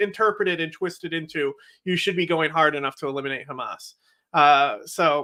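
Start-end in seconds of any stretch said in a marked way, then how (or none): none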